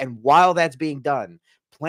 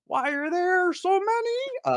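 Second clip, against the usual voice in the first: many said very high and drawn out. Asked by the other speaker to do a voice: Kermit the Frog voice. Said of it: "don't make me do a Kermit voice".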